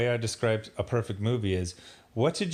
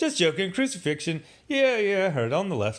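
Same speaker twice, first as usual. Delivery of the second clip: wisecracking, smart-aleck tone, pitched up; 8 semitones higher than usual. Retelling a comedy scene, imitating a smart aleck character. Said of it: "this smart aleck character".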